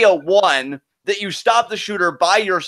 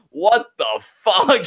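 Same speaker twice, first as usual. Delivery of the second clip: bewildered, villain-style delivery. Retelling the villain walking in on a scene, imitating Bryce Walker's line delivery. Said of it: "Just like that".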